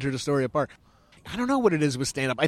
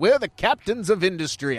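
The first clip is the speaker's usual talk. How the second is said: put-on old-timey American voice, much higher, louder, faster; 6 semitones higher, 4 dB louder than usual. Explaining what a name sounded like to them: old-timey 1920s american voice. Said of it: "I don't know why I said it like that".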